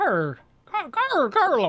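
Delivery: bad put-on Irish accent. Asked to say Golem in an Irish accent, the speaker tries: bad Irish accent. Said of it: "can you say Golem in an Irish accent?".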